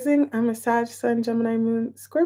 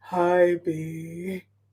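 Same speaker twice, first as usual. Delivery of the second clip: deliberately deep, very slow put-on voice; 5 semitones lower, 4 dB quieter than usual. Greeting B, try out a put-on deep voice. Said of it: "My deep voice doesn't sound good today".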